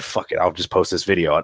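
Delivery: ordinary talk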